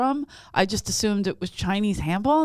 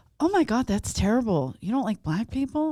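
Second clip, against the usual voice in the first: taken-aback, scandalized, freaked-out, shocked tone; 2 semitones higher than usual. Retelling what a lady asked after being taken aback: imitating a shocked, freaked-out woman. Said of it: "freaked out. She, like, was taken aback".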